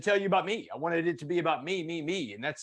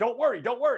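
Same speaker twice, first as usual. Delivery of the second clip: high-pitched screamed delivery; 7 semitones higher than usual. Retelling screaming back at an armed cop, acting out his own past scream. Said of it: "I screamed back at him".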